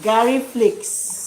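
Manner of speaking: mocking, drawn-out delivery.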